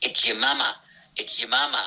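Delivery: put-on American accent. Speaker retells a man holding a phone up to Carl, in a put-on American accent. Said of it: "in an American accent".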